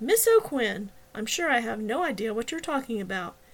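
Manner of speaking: ordinary delivery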